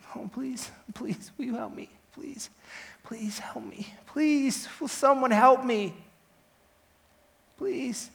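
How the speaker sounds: tearful, weeping, pleading voice. Speaker retelling turning to the gallery before the judge, reenacting weeping and begging. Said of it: "As I wept, I begged".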